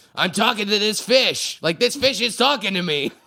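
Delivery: put-on strong, heavy Boston accent. Retelling a TV fisherman's joke about talking to a fish: imitating Charlie Moore's Boston accent. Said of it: "he's got a very strong Boston accent".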